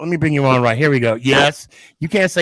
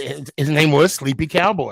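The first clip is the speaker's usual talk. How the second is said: plain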